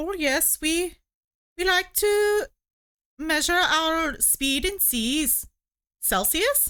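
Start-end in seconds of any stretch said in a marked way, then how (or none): 0.0-5.5 subtle put-on Welsh accent, slow and high. Asked about a weird welsh measurement, answering in a subtle welsh accent. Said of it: "my subtle attempt at a Welsh accent".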